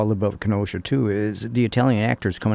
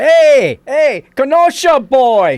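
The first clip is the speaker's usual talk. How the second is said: put-on bellow, much higher, louder, slower; 11 dB louder than usual. Retelling how the speaker's grandmother called out in a deli, imitating someone bellowing. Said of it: "my grandmother bellows out".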